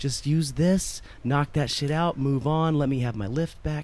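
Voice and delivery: ordinary talk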